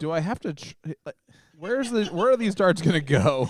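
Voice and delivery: put-on upset, loud and high. Voicing a player's thoughts during a darts match: imitating Jay sounding upset. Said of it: "He's so upset".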